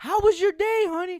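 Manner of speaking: very high, very loud, shrill mom yell. Acting out a mom on a video call: imitating a mom yelling into a microphone. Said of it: "you don't have to yell into the microphone".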